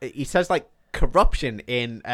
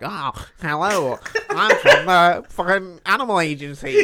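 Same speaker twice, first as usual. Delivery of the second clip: high, swooping, weird little nerdy put-on voice; 7 semitones higher, 6 dB louder than usual. Retelling a man backstage stopping a woman with a snake, doing a weird little nerd voice. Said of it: "he puts on this weird little nerd voice".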